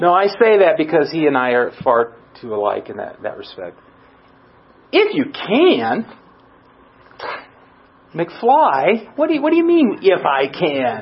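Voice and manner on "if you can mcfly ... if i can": put-on, mock-snarky sarcastic tone. Imagining Jesus answering snarkily, the speaker uses a mock-snarky tone. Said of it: "was he being snarky? Was he going like Mitch?".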